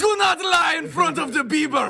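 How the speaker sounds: put-on loud, very high Brazilian male accent. Acting out a Brazilian drug boss in a joke scene: put-on Brazilian accent. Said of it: "That was my Brazilian guy".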